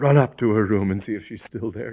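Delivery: ordinary delivery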